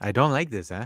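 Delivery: disappointed tone with put-on Italian accent. Imitating a streamer reacting to a comment: Beppe Italian accent. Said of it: "I can't do an Italian accent".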